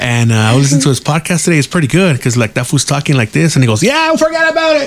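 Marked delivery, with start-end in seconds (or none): 3.8-4.9 very high, stretched-out, drawn-out hollering. Describing a podcast host's delivery, the speaker mimics him, retelling a yell. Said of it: "and he yells like that".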